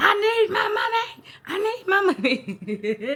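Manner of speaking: very high, very drawn-out, frantic, pleading yell. Retelling banging on the steering wheel, going crazy: imitating own frantic yelling. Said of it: "I'm going crazy".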